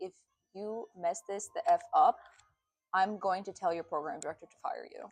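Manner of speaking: deadpan, straight-faced, menacing tone. Retelling what a neurosurgeon said to an intern: imitating a surgeon's deadpan threat. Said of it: "with a straight face".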